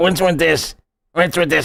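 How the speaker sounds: put-on swamp creature voice. Imitating a character from a show the speaker can't name, swamp creature voice. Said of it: "sounds like almost like a swamp creature".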